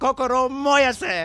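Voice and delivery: fired-up, high, very slow anime battle cry.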